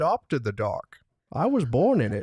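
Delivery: deep, menacing masked villain character voice. Asked for the villain's iconic line, doing a Bane voice. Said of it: "that's a good Bane".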